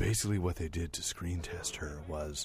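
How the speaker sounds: low-toned, hushed whisper. Telling the others how a screen test was done, whispering in low tones. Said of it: "I'm gonna tell you this in low tones".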